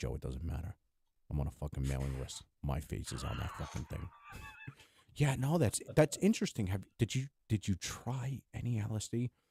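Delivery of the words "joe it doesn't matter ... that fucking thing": low, excited put-on voice, lower. Doing a Joey Diaz impression for the other speaker. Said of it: "That's my Joey Diaz impression".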